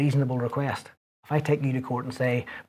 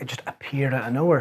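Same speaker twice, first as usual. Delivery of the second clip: ordinary delivery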